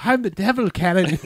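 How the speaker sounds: put-on odd accent from no country, very high. Retelling how the devil in a show talked: imitating a weird out-of-place accent. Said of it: "except it's more like".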